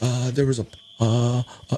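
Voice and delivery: breaking, hesitant voice stalling on fillers. A coach retells a player walking over during a timeout, imitating a cracking voice. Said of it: "he's all cracking voice".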